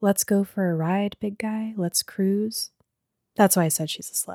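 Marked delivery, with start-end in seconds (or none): 0.0-2.7 quiet, hushed, tempting, inviting stage whisper. Retelling a book scene where the car speaks: imitating a half-whisper. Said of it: "she whispers to him".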